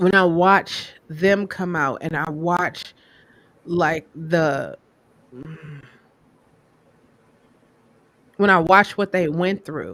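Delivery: choked-up, emotion welling in the voice. Describing watching others go through coming out, getting emotional. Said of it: "and I'm getting emotional".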